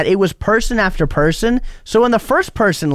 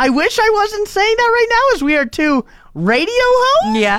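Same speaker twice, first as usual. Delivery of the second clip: very high-pitched voice. A radio host speaking on air to the other host, voice a little more high-pitched. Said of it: "your voice gets a little more high-pitched".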